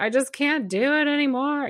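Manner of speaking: high, teary, desperate play-acted voice near tears. Recounting a session where she prodded them, speaker quotes past self: retelling own crying. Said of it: "tears are coming down my face and I'm like".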